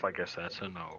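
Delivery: hushed whispering. Muttering aside during a game scene: whispering to oneself. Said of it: "I'm just gonna whisper to myself".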